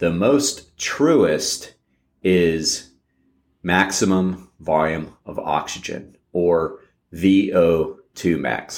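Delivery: slow, drawn-out delivery. Explaining training intensity to listeners, naming the truest measure, said very slowly. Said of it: "Had to say that slow".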